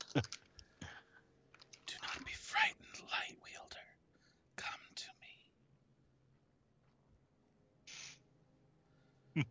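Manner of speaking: barely there, very quiet, whispered voice. A game character beckons the player, in a whispery voice. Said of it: "He's just whispery".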